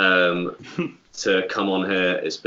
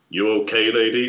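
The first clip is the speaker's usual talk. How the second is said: deadpan, flat, wooden, couldn't-care-less delivery; 3 semitones higher than usual. Retelling how a cop spoke to a woman breaking down, in a wooden voice. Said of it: "in this really like like wooden voice".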